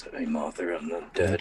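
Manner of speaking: deep, gravelly tone. Recapping a story set after Arkham Knight, voicing Bruce Wayne: Bruce Wayne gravelly voice. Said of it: "doing his little Martha gravelly voice".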